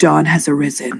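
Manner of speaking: soft half-whisper, very close to the ear. Leaning very close to another character's ear at dawn: half-whispering in character. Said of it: "I would like to whisper".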